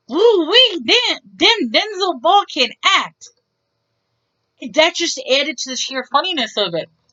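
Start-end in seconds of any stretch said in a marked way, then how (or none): 0.1-3.2 thick Texan drawl, loud and slow. Quoting what someone said to the speaker, in a thick Texan accent. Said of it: "with such a thick Texan accent".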